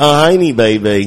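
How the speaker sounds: loud, belted-out put-on English accent. Ordering a Heineken because Austin Powers is on, put on an Austin Powers accent. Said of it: "you just did the accent like right on par".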